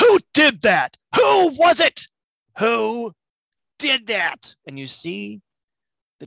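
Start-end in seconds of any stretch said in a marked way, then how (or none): 0.0-4.5 very high, swooping bellowing in a tiny gnome voice. As chaos breaks out, the tiny gnome proprietor shouts at the crowd: Jan von Hubenstank bellowing. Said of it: "a tiny figure bellowing".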